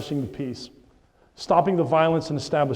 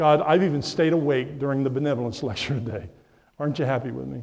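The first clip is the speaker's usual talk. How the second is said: normal talking voice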